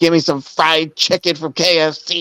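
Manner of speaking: high-pitched parody voice, mocking. Joining a parody by playing Megan: parody of Megan. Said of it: "And I'm Megan V R".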